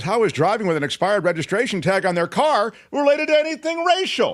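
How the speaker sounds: acted yell, very high pitch, rising. Reading out another person's question to the others, yelling. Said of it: "Why are you yelling?".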